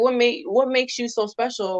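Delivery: ordinary talk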